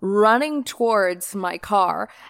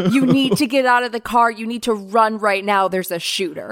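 ordinary talk, nothing marked

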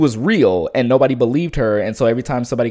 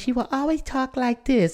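put-on very high, soft, small babyish voice; 13 semitones higher, 6 dB quieter than usual. Describing the cute one from the show, in Bubbles baby voice. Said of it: "the little baby voice".

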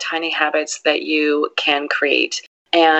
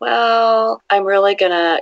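slow, hesitant, unsure, drawn-out "well"; 4 semitones higher than usual. Contrasting with speaking from confidence, showing an unsure, hesitant tone. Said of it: "there's a different tone in your voice".

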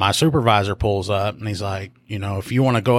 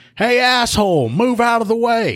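put-on rude yell, very high and drawn out; 13 semitones higher, 3 dB louder than usual. Retelling a stranger in a car hollering: imitating someone hollering. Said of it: "I hear somebody hollering from that car".

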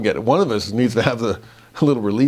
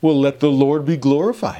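heavily sarcastic, scornful, mocking, acted tone; 4 semitones higher than usual. Reading a scripture quote of mockers aloud: imitating an incredibly sarcastic tone. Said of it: "saying this incredibly sarcastically".

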